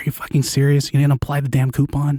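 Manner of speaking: furious yell with a whispered edge. Retelling scolding a coworker at the register: retelling a whisper yell. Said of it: "like a whisper yell".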